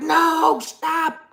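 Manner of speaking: high, frantic, panicked shout. Retelling seeing a little girl spun around, imitating own panicked shout. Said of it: "with a heart attack".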